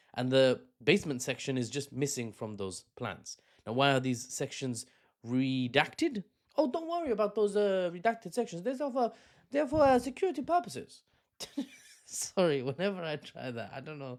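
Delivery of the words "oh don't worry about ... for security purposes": very high put-on Chinese accent in English. Retelling the embassy dispute with the UK government, speaker voices the builders in a mock Chinese accent. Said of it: "trying to sound like a native Chinese person trying to speak English".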